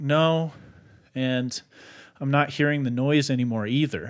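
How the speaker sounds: usual speaking voice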